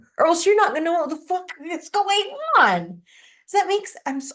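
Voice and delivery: animated, worked-up, high swooping rant. Explaining to the others how to follow the original lore, animated talk. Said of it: "I'm yelling".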